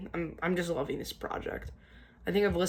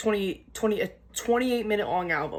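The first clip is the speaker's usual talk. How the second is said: stuttering, stumbling over the words, restarting twice; 3 semitones higher, 4 dB louder than usual. Talking about an album the speaker liked: stuttering. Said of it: "Sorry about my stuttering".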